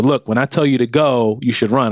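ordinary talk, nothing marked

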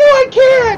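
very high, very loud, shrill, hysterical screaming. Complaining about a movie's dialogue, mock hysterical screaming. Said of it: "screaming hysterical woman".

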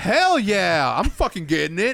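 put-on eager excitement, loud and swooping. Retelling a friend's reply about getting a booster shot, retelling an excited reply. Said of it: "Why are you so excited of getting a shot?".

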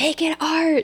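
very high, shrill screaming. Retelling how the old acting teacher screamed at students: imitating Susan Batson screaming. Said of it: "She'd scream".

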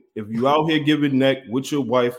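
ordinary talk, nothing marked

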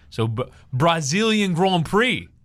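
jokey, comedic put-on Portuguese accent. Asked to say something in Portuguese, the speaker answers in a comedy Portuguese accent. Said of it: "I just do a comedy accent".

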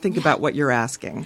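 mocking condescending tone. Retelling how a man answered Chris: imitating a condescending tone. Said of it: "in the most condescending way".

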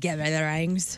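put-on Irish accent. Imitating Justin Theroux's line from Charlie's Angels: Justin Theroux Irish accent. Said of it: "It's Justin Theroux in Charlie's Angels".

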